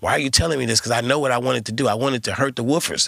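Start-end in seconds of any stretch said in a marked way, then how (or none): 0.0-0.8 confused, puzzled voice. Retelling being told in the studio to turn the bass down: imitating his own confused younger self.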